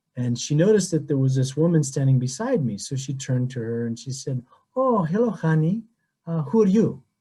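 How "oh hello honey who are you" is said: put-on lovely sing-song Greek accent, higher. Retelling how a lady greeted the woman beside him, in Evangelia's Greek accent. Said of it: "with her beautiful Greek accent".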